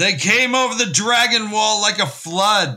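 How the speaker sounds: ferocious, forceful, angry outburst, very high pitched. Reading a scene aloud, a muttering character suddenly speaks in a strong, angry voice. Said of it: "Tam said suddenly in a strong, angry voice".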